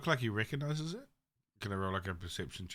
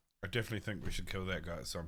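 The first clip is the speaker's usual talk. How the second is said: hushed, very quiet, rushed aside under the breath; 2 semitones lower, 3 dB quieter than usual. Tabletop player telling the group what to do next, speaking very quietly. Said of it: "I'm going to say very quietly".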